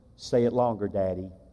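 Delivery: put-on soft pleading voice. A father retells his girl asking her daddy, retelling a small, soft plea. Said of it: "in a small, soft, pleading voice".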